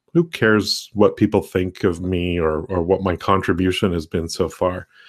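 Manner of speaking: ordinary talk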